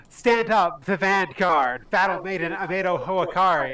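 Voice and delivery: yelled out like a loud battle cry.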